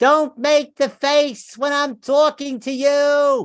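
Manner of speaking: put-on loud, shrill, high New Jersey accent, you stretched. Quoting what a woman says in every fight, in a New Jersey accent. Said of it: "she says the same thing in that Jersey accent".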